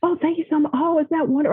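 mock, high-pitched, snappish, biting sarcasm. A mother recalls her kids interrupting her phone call, retelling snapping at them. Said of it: "I'm snapping at them going".

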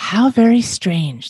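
wondering murmur of a crowd in chorus. Narrator reads a crowd of bats reacting to a young bat's story: murmured. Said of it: "they all murmured".

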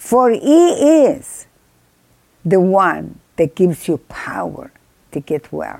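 very slow, deliberate, word-by-word reading. A speaker rereads a scripture aloud to listeners, reading slowly. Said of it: "I read it slow".

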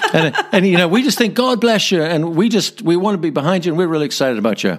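clumsy put-on American accent. Retelling a supportive message someone sent, in a bad American accent. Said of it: "forgive my bad American accent here".

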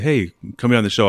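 ordinary talk

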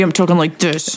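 put-on grumpy, grouchy tone. Showing how speech sounds when in a bad mood: grumpy voice. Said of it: "if I'm grumpy".

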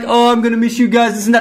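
acted-out fake crying. Mocking a man who went outside crying to the others: imitating someone crying. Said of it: "starts crying, saying, like".

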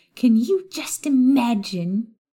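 high, drawn-out, sickly-sweet sugary witch voice. Reading a story, a toad-like witch talks to Maya: high-pitched sugary voice. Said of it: "a variety of pink shades in the form of a short toad-like witch who stood unassumingly in [name]'s doorway with a stack ... A high-pitched, sugary voice interrupted [name]'s thoughts".

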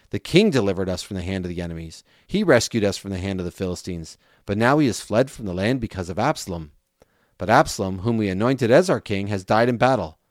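plain reading voice

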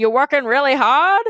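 funny, put-on, old-school cowboy voice. Retelling a talk with a 75-year-old cowboy, the speaker does a funny old cowboy voice. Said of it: "so I guess I have to as well".

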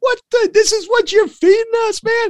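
very high, outraged, griping voice. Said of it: "I can hear his voice".

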